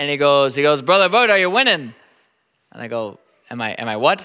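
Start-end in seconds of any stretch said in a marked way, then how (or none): 0.8-1.9 bad put-on Irish accent, higher and much faster. Retelling how a former police officer in Ireland came up to you, in a horrible Irish accent. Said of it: "I have a horrible Irish accent".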